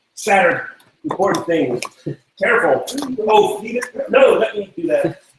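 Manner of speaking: very high, garbled, incoherent jumble of yelling. Character rummaging through crates while a guard watches: yelling incoherently. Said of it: "yelling incoherently".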